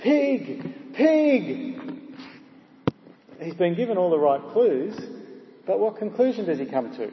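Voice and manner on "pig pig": high yell at the top of the voice. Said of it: "he yells at our man at the top of his voice".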